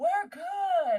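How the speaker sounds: loud shouting, good drawn out. Describing a planned thumbs-up exchange, the speaker shouts instead of mouthing the words. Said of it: "I'm actually just shouting like".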